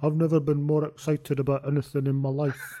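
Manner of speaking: flat, monotone delivery. Doing an impression of a TV promotion line: Gavin Hastings impression. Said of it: "is my Gavin Hastings impression".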